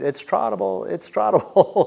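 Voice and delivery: rough, loud, high hollered yell. Retelling being stuck behind slow riders on the trail: imitating someone yelling. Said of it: "and you're yelling".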